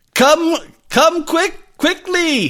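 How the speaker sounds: very high, urgent shouted cry. Voicing Santo as he motions the players onto the balloon, shouting urgently. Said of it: "he shouts".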